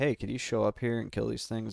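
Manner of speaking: ordinary talk, nothing marked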